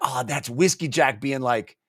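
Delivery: ordinary talk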